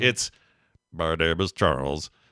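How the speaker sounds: low deadpan robot voice. Describing the voice a show has given its character, robotic deadpan impression. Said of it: "but like it's super like robot-y".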